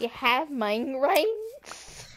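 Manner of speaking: oddly slow, stretched-out, drawn-out delivery.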